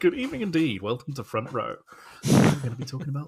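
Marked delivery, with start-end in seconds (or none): 0.0-1.8 put-on announcer voice, pitched up. Repeating the greeting on purpose, put-on Radio Four announcer voice. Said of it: "I sound very, very, uh, Radio Four saying that".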